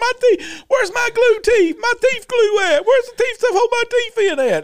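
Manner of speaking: very high, loud screaming.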